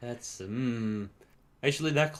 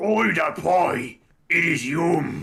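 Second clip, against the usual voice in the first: loud, high ork warrior voice, belted out; 6 semitones higher, 8 dB louder than usual. Voicing a character in a game, using a 40K Orks voice. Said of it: "a voice of Da Ulks from forty K".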